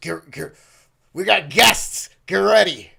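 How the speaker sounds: very loud, gruff, rough monster bark. Voicing a bugbear who warns the others of guests: bugbear voice. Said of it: "the bugbear stops and turns to everybody and goes".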